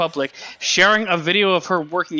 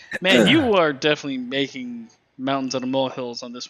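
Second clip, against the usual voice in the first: ordinary talk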